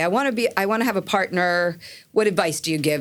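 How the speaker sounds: ordinary talk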